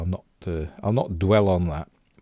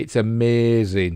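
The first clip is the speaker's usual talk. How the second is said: tongue-in-cheek, sarcastic, mocking delivery; 3 semitones higher than usual. Introducing a behind-the-scenes set clip: sarcastic. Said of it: "I'm being sarcastic".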